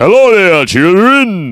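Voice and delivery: loud, swooping, sing-song cartoon cook voice. Trying to talk as low as possible: Chef from South Park voice. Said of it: "That's Chef from South Park".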